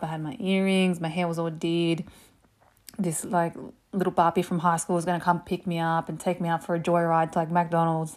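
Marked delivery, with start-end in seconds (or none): none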